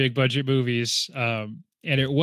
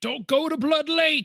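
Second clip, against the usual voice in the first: put-on crazy old man voice, higher. Retelling a movie scene, imitating a crazy old guy warning. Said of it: "a crazy old guy who shows up".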